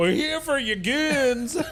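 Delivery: very high, put-on twangy sheriff drawl. Matching the sheriff's twang, the speaker answers him in character: twangy voice. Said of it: "that similar sort of twang in his voice".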